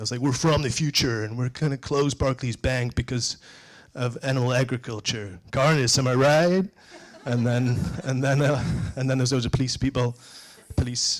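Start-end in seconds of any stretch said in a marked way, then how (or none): 0.2-6.7 put-on American accent. Retelling a speech given as an agent from the future: american accent. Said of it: "I did an American accent".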